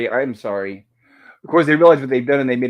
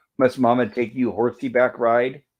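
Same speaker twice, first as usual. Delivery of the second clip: normal talking voice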